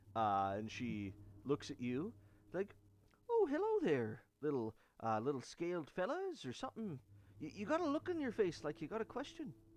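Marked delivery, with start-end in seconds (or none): 3.3-9.5 high, sing-song female creature character voice. Voicing a Harengon woman who greets a scaled adventurer: Harengon woman voice. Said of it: "a Harengon woman that is clapping".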